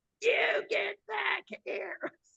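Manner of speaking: shrill, loud, high-pitched, raspy shrieking scream. Retelling what a woman screamed out, imitating a loud raspy scream. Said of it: "she screamed out like uh, with a very loud, raspy voice".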